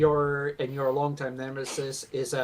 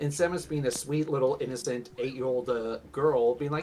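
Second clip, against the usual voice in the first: plain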